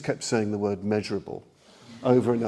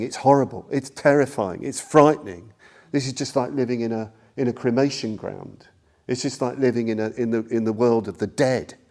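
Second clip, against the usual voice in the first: normal talking voice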